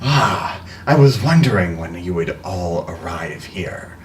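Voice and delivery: distant voice over a faint, weak walkie-talkie radio signal. Describing a voice coming from a creature's open mouth, distant walkie-talkie voice. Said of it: "like someone is talking through a walkie-talkie, and the signal is weak".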